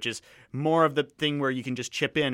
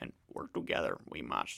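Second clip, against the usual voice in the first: very quiet, breathy, almost whispered; 14 semitones lower, 13 dB quieter than usual. Reading a meme aloud in a Yoda impression. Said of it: "my Yoda impression".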